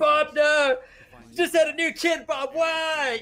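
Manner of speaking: acted anguished scream, very high, very slow, drawn out. Acting out an enemy's friend after a kill: imitating an anguished scream. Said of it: "screaming, like, in anguish".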